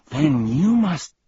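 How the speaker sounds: with a gasp. Milo answers the muttering villain: gasping. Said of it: "gasped Milo".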